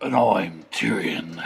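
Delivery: very low, deep, puffed-up manly voice. One of the boys introduces himself to the family channel's viewers, very manly voice. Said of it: "Very manly voice".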